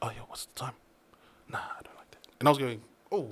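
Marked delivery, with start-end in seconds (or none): 0.0-2.3 mock whisper, much quieter. Speaker retells how people on set talked to each other, imitating people whispering. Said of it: "everyone's whispering to each other".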